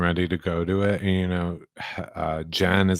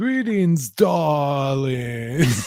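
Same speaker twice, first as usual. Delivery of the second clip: put-on clumsy British accent, high, loud, darling stretched; 8 semitones higher, 5 dB louder than usual. Describing a woman struggling to sound British, Gina's attempt at British accent. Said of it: "her attempt at a British accent".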